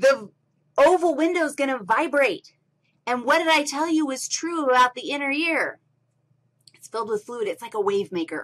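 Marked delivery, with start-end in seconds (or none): 0.0-2.5 worked-up, eager, excited shouting. Explaining the inner ear to a listener, yelling. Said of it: "When I'm yelling at you like this".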